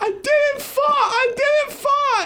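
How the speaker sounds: very high, slow, drawn-out sobbing voice. Retelling a story, the speaker imitates a girl crying as she denies it. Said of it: "and then she starts crying".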